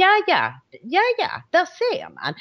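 high, smug, knowing "ja ja, där ser man".

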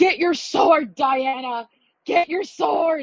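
put-on, high, excited cheering yell. Retelling how she heard her yelling at a movie, imitating someone yelling. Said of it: "she's like yelling".

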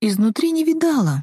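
abashed, sheepish, embarrassed. The narrator answers the miller's question about never seeing a mill, embarrassed reply. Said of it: "смущенно ответила я".

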